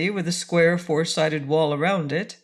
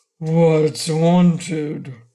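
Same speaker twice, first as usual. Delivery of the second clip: put-on loud, low grumbling old giant voice; 5 dB louder than usual. Narrator voices an old giant questioning the arriving strangers, low, grumbling voice. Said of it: "in a low, grumbling voice".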